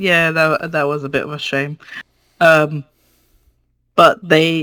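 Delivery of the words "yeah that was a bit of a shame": mock dry delivery, lower and quieter. Recounting how someone reacted to burned hands, retelling a dry remark. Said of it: "Mok just kind of dryly goes".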